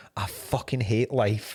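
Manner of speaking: put-on muttering under breath. Retelling being caught muttering to oneself: imitating muttering under breath. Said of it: "saying under my breath to myself".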